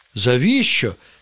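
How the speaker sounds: astonished, taken aback, surprised. Narrator reads the fibber's reply to the mushrooms, surprised. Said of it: "здивувався пустомелик".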